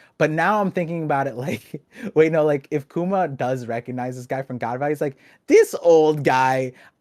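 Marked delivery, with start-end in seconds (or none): 5.5-6.7 disrespectful, brushing-off tone. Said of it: "maybe he's being disrespectful".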